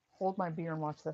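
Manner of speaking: normal talking voice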